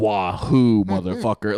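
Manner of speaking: forceful, combative delivery, flung out. Imitating Mario about to fight a turtle: imitating Chris Pratt as angry Mario. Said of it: "he's about to fight a turtle, and he goes".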